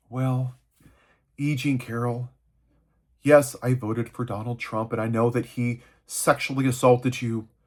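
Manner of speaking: low, flat, even-keel monotone delivery. Acting out how she'll answer the question: flat even monotone. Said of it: "she'll answer the question in a monotone, even keel voice".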